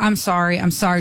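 mock-flustered, upset girl voice. Retelling how a girl came to the door and apologized, retelling a flustered apology. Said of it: "She's flustered".

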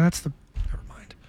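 quick, quiet whisper.

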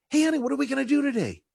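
put-on very high, clingy, pleading little-kid voice. Acting out a newly retired husband asking his wife: imitating a clingy little kid. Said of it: "like the little kid pulling on the mom's dress".

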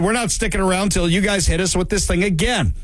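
plain

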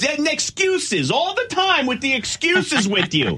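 put-on very high, shrill, scolding yell with New York accent. Retelling a couple's argument from the wife's side: imitating a loud New York wife, Marisa Tomei in My Cousin Vinny. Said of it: "she goes".

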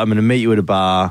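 normal talking voice

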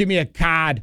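Boston accent, r dropped in card ("cahd"). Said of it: "Boston people can't say their R's".

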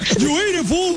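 high-pitched cartoonish radio voice.

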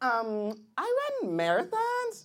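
put-on sing-song girl voice.

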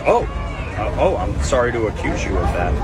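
ordinary talk, nothing marked

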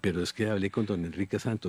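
ordinary delivery

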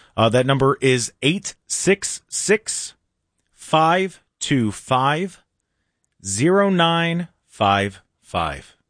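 slow delivery. Giving everybody the text number for a trivia question, said slowly. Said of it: "I'm going to say it slow".

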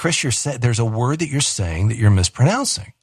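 ordinary talk, nothing marked

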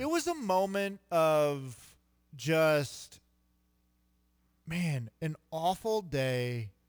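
getting emotional, speech very drawn out and slow. Recalling a losing game attended with Dad, getting emotional. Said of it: "why am I getting emotional right now?".

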